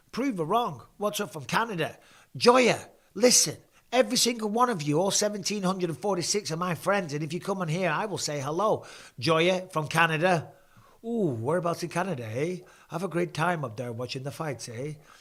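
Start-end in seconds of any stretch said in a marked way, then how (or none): 11.0-14.9 terrible, bad, put-on fake Canadian accent. Host greeting a viewer from canada during a fight broadcast: terrible canadian accent impression. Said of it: "Terrible Canadian impression".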